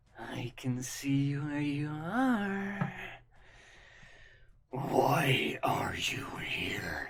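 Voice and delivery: very slow, swooping, large dragon creature voice. A large creature looks out over the area and speaks, in a large, low, booming voice. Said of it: "His large, low, booming voice fills the space".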